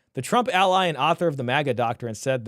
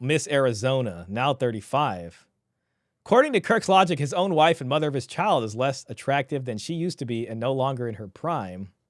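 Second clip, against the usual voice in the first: usual speaking voice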